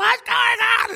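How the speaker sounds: shrill, loud, alarmed outburst, pitched way up. Retelling his wife, confused while they were lying down, imitating loud freaking out. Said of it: "And she's so loud".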